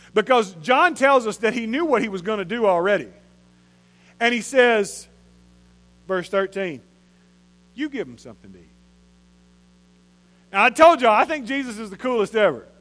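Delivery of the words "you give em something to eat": amused, knowing, smirking tone. Acting out Jesus telling the disciples to feed the crowd: smirking voice as Jesus. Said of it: "see the smirk in Jesus' voice".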